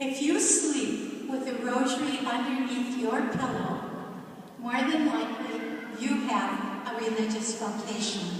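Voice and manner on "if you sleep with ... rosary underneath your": plain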